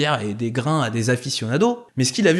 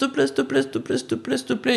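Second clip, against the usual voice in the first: high-pitched, insistent begging tone. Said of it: "le type devait tellement insister en disant".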